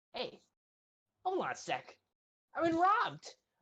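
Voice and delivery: very high, shrill, swooping goblin voice. Voicing a goblin shopkeeper who wakes and finds he was robbed: voicing a goblin shopkeeper. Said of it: "and he's like".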